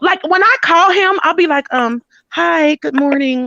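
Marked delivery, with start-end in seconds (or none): 2.3-3.5 put-on feminine voice, slower. Speaker acts out greeting the man when she calls him, in her feminine phone voice. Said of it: "like I just completely change".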